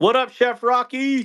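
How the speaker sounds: shrill, very high, sudden yell. Speaker calls out a greeting into the microphone, yelling. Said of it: "did I yell into the microphone?".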